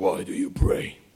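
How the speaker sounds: put-on, almost male-sounding voice. Retelling what a possessed woman said to the praying people, almost a man's voice. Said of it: "almost man's voice".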